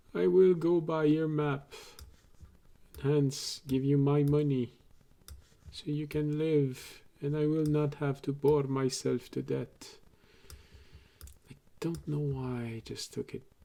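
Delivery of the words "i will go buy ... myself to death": put-on Transylvanian vampire accent. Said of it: "Sort of Transylvanian accent".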